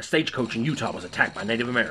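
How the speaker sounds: plain reading voice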